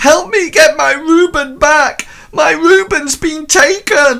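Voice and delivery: very high, loud, crying wail. As game master, voicing a villager woman who comes out and wails at the party. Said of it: "she sort of like wails at you".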